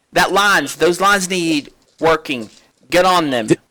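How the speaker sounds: loud, high-pitched barked yelling. Narrator voicing him as he yells at another crew member during a storm, yelling. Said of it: "he yells at Jake".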